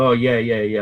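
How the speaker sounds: sarcastic tone on "yeah". Retelling a reply to a driver: imitating own sarcastic reply.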